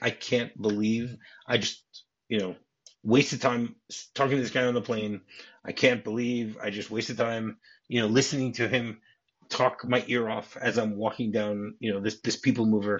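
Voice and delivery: ordinary talk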